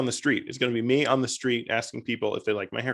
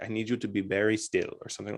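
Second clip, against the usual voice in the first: charming put-on Spanish accent, lower and quieter; 2 semitones lower, 4 dB quieter than usual. Retelling what the barber said during a haircut, charming spanish accent. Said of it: "he says it in his like very, very charming accent".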